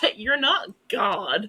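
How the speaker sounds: put-on, cheeky, light heckling call-out. Retelling how a friend called out into the cinema: retelling a loud call-out. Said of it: "very loudly into the cinema".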